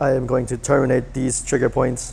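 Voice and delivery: rough, buzzing, creaky robot machine voice. Testing level two of a voice effect, speaking in a robot voice. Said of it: "Now I'm going to sound like a robot".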